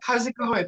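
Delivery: said really quietly, almost swallowed, slightly high voice. Retelling greeting a friend getting in the car: imitating saying it really quietly. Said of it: "Really quietly".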